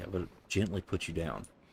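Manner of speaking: hushed whisper. Playing a game and talking to what's on screen: whispering. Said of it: "I don't know why I'm whispering".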